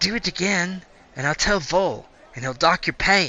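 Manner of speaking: speaking in a whisper. Voicing a character warning a sleepy guard while others sleep: whispering. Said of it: "whispering 'cause people haven't quite woken up yet".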